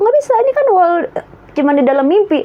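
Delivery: high, insistent, stubborn protest.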